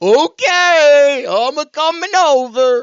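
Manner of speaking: very loud, very high, very slow cartoon voice, stretched-out okay. Retelling a dubbed cartoon's English voiceover: Goofy voice. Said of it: "Can you do Goofy?".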